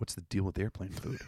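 very quiet, hushed conspiratorial voice. Showing how to say the same joke in conspiracy voice. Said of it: "in conspiracy voice".

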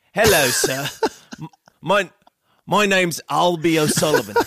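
put-on polite little British child accent, stammering. Acting out an imagined kid answering the door: little kid with British accent. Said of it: "a little kid with a limp and a British accent".

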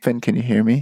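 whispering. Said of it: "whispers to the clone".

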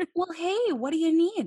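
put-on Minnesotan mom accent. Acting out Barb calling back after getting the business card, use Barb's Minnesotan mom voice. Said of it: "Because she's a Minnesotan mom".

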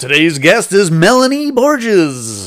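very loud, showy, booming, swooping announcer voice. A podcast host introduces today's guest on the show, in an announcer voice. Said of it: "doing this whole podcast in like an announcer voice".

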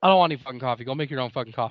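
put-on mean, angry, aggressive snapping tone. Retelling how the father snapped at his wife over coffee: imitating someone snapping angrily. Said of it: "he snapped on her".

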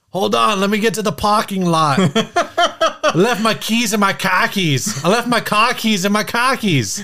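terrible fake Boston accent. Answering the other player's Boston prompt in a game: bad Boston accent. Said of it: "We are terrible at Boston accents".

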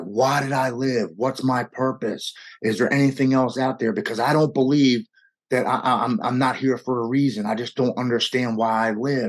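loud cry projected upward as if skyward. Retelling driving through a park after being sick: retelling a yell at the sky. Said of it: "I'm yelling up at the sky".

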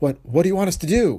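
stumbling, high, gasping, frightened delivery. Hearing the horrible threat, Rice answers the man, gasping. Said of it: "Rice gasped".

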